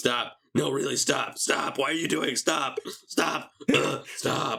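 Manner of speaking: high, put-on, fed-up, exasperated shouting, over and over. Describing a scene where a character yells at troops to stop, retelling repeated yelling. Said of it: "He yells it".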